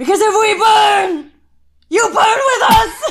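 slow, shrill, high yell at full volume, drawn out. Redoing an old Hunger Games impression bit, loud Jennifer Lawrence Hunger Games shout. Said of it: "this is going to be loud".

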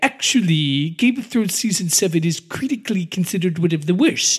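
smug, pompous, superior know-it-all cartoon nerd voice. Co-host discussing Game of Thrones season 7, doing a Comic Book Guy impression. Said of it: "like the comic book guy from The Simpsons".

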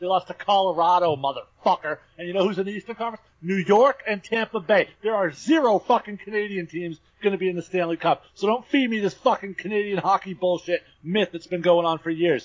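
high-pitched, riled-up rant. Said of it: "Riled up, my friend".

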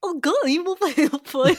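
silly, daft put-on voice, high and loud. Showing how a game card is meant to be read aloud: goofy voice. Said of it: "read them in like the goofy voice".

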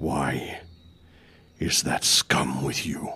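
low, deep, slow, drawn-out beast voice. Voicing the Minotaur as it questions the players: Minotaur voice. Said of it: "you hear the Minotaur go".

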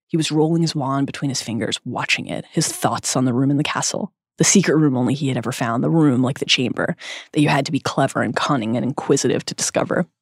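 normal talking voice

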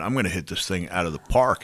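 normal talking voice

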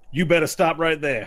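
loud, threatening lawman voice. Voicing the sheriff drawing a gun on the Cyclops: sheriff voice. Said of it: "the sheriff draws his gun".

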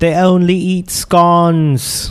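fake British accent. Joking about british food with the others: put-on british accent. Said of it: "Stop with the accents".

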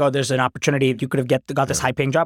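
plain

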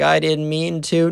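mock crying a little through words, high, slow. Retelling a son's reply to his mom's accusation: imitating someone crying a little. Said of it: "crying a little bit".

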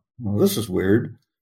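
ordinary talk

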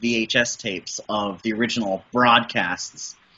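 ordinary delivery

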